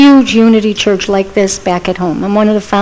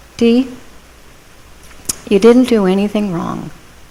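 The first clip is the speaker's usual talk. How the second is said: very soft, quiet voice; 5 dB quieter than usual. Retelling what a friend from church said before they prayed, in a very soft voice. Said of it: "she said in a very soft voice".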